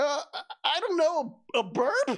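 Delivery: very high, slow, hesitant, stumbling voice. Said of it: "He stares at you, then points".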